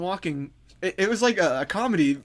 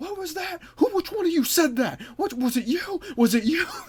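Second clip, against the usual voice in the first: very high-pitched, angry, confrontational yelling; 10 semitones higher than usual. Retelling a confrontation, acting out a man yelling at the group. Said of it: "he starts yelling".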